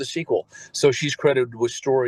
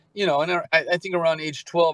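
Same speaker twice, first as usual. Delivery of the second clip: ordinary talk, nothing marked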